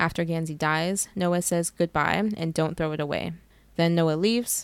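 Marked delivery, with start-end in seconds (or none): none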